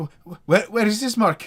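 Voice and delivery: shrill, very high, stammering shout. Voicing a character drawing her blade: shouting. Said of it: "as you hear her shout out".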